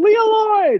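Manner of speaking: shrill, very high, loud shriek. Recounting a reunion at an airport baggage claim: retelling a scream. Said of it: "and I screamed".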